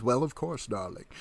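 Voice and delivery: speaking with a lovely lisp. Retelling Karloff answering a child who asks to ride with him: Karloff's lispy voice. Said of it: "in that, uh, lovely lispy voice of his".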